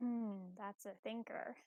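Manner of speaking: spoken softly. Answering a character's question out of character: said quietly. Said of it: "Raise your volume".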